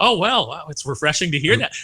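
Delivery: acted, dripping sarcasm oozing from every word. Retelling what Mark Hamill said on stage: imitating Mark Hamill's sarcasm. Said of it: "you can just feel the sarcasm".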